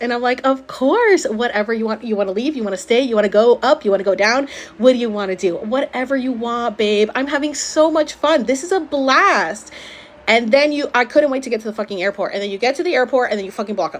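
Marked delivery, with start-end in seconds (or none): 0.4-9.7 put-on, fake cheerful customer-service voice. Retelling own past words while playing along with a smile: put-on cheerful server manner. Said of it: "And I put on my server face".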